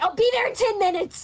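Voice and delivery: frantic, alarmed, high, panicked voice. Retelling a woman who called the shop: imitating a panicked caller. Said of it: "in like in a panicked voice".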